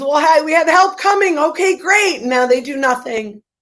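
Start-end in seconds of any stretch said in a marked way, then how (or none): 0.0-1.4 acted, high-pitched shrieked scream. Retelling a video where someone screams to people stuck on an escalator: imitating someone screaming. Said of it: "Someone screams".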